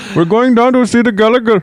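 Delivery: put-on very high-pitched Indian accent. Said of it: "That's a pretty good Indian accent".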